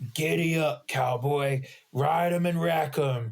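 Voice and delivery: dark, raspy, menacing villain voice. Describing a scene from the show, the speaker quotes Frieza in a dark raspy voice. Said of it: "in a dark, raspy voice".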